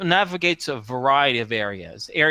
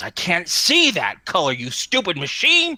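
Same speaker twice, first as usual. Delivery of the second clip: put-on snarling, angry, growling dog-boy voice; 4 semitones higher, 4 dB louder than usual. A narrator voices the dog boy speaking to a terminal, growling dog boy voice. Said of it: "You can hear the dog boy growl".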